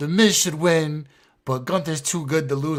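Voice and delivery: put-on heavy English accent, laid on thick. Quoting a friend's dad's prediction, in a thick english accent. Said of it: "in his thick English accent".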